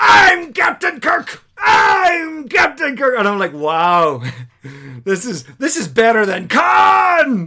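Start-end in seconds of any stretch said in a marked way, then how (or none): 0.0-1.4 put-on indignant character voice, much higher and louder. Retelling a scene where Captain Kirk faces an impostor: mock-indignant Captain Kirk. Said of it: "Kirk being indignant when someone is pretending to be the captain".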